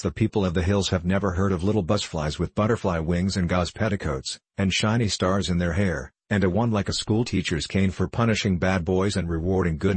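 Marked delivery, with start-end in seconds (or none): none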